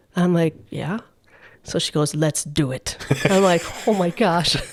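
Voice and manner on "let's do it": put-on Russian accent, kept cool and calm. Retelling a woman's reply to the speaker, in a cool Russian accent. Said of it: "you have to imagine a cool Russian accent".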